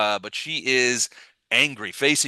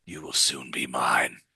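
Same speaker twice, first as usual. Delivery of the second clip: hushed whisper, very low and deep; 11 semitones lower, 4 dB quieter than usual. Narrating a saving-throw scene, voicing Maruvian speaking to the player: Maruvian's whisper. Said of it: "he as he whispers".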